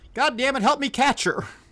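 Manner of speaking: loud, high holler. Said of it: "he hollers around".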